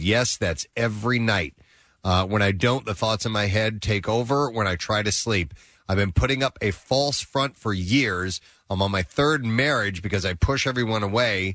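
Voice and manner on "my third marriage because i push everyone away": ordinary talk, nothing marked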